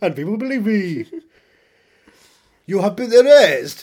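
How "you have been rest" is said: put-on Austrian-English accent, "rest" long and drawn out. Boasting of pretending to be governor of California, showing off a put-on accent. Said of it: "I can do the accent".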